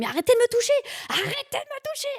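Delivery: very high, shrill, shouted voice. Retelling giving birth, the speaker quotes what she shouted at the gynecologist, retelling a shout. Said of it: "j'ai crié".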